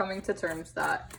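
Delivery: plain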